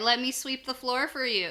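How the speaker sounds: usual speaking voice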